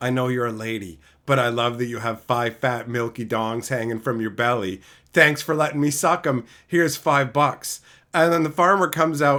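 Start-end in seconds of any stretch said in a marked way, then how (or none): 0.0-7.8 very low, hushed half-whisper. Telling a story about a man and a cow, retelling his half-whisper to the cow. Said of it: "he whispers to the cow".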